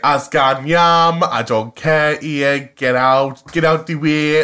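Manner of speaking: strong Cumbrian accent. Showing how they talk at home with one friend, the speaker goes strongly Cumbrian. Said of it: "I go super Cumbrian".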